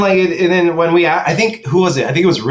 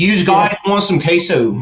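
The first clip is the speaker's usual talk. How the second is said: casual, put-on Philadelphia accent. Imitating a waiter who mispronounced queso: imitating a Philly accent. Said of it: "he said it with, like, a Philly accent".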